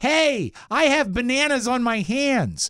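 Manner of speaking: Welsh-tinged put-on American accent, high and slow. Retelling what a guy from wales always said, do his american accent. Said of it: "That was his American accent".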